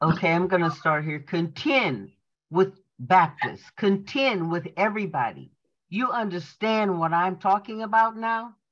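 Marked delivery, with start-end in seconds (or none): none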